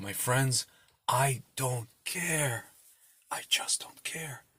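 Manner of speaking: slow, drawn-out, unhurried whisper. Joking about not caring for restaurants: Joe Biden impression. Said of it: "I'm still imitating Biden".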